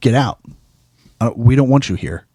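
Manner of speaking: put-on angry man voice, mock-angry. Retelling what a man told Hassan, imitating an angry man. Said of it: "and he's very angry".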